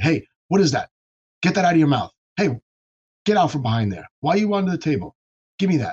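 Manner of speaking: mock scolding yell. Retelling how the speaker yells at the little daughter: imitating yelling at a child. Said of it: "when I have to yell at her".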